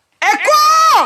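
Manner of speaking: loud high-pitched shout. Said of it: "il faut que je crie fort".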